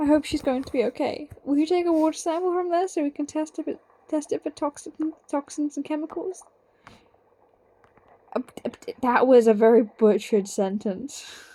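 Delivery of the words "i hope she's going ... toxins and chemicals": odd, made-up, put-on character voice, tripping on words. Reading game dialogue of Fishlegs worried about his dragon: Fishlegs voice. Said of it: "Why did I do that voice for him?".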